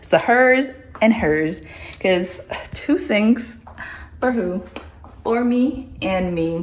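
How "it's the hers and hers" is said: the word hers stressed, said high and loud.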